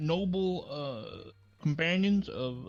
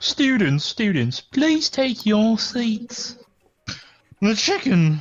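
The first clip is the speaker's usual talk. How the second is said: booming, very loud, prim, very proper put-on British accent; 5 semitones higher, 9 dB louder than usual. Asked for a best British accent while addressing students, very proper British accent. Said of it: "Best British accent, / Very proper".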